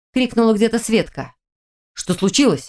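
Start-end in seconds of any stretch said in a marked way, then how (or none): 2.0-2.7 scared, fearful tone. Lerik, after a girl screams and falls, asks fearfully. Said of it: "испуганно вопросил Лерик".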